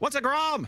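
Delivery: loudly. Asking in character about an unknown creature: loud. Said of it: "loudly, like you do".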